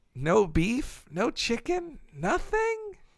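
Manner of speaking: quiet, hushed, slow, baffled, disbelieving tone. Retelling what a woman said while ringing up the speaker's order: said quietly. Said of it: "shook her head and said quietly".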